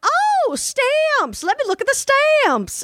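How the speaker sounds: booming, very high, slow Texas twang. Retelling a post office visit: imitating a loud Texas accent. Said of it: "loudest Texas accent I've ever heard".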